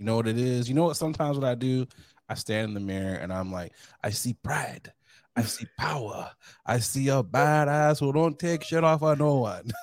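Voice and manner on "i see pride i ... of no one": very bad, slow, put-on Jamaican accent. Describing what he says to himself in the mirror, in the worst Jamaican accent ever. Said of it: "Worst Jamaican accent ever".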